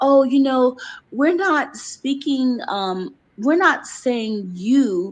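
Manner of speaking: put-on snide, passive-aggressive, mocking voice. Retelling what a woman said about her, imitating a passive-aggressive woman. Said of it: "the way she was sounding".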